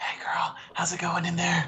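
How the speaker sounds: high little whisper. Leaning close to a bag to speak to what is inside: whispering. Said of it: "let me just whisper into Ilmay's bag".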